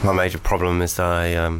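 low, flat, bored drone.

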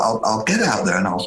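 ordinary delivery

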